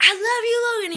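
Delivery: very high-pitched, very loud, shrill scream. Retelling the sound check, imitating own past scream: retelling a scream. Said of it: "I screamed".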